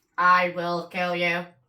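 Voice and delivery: very slow, drawn-out, one word at a time. Imagining a ghost that speaks a threat: Stephen Hawking voice. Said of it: "Sounding like Stephen Hawking".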